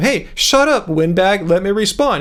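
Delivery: normal talking voice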